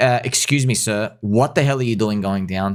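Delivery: plain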